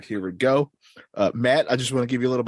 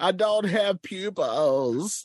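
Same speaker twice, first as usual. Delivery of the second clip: high-pitched, slow, drawn-out cartoon-villain voice; 8 semitones higher than usual. Playing Skeletor, answering a question about becoming a citizen: Skeletor voice.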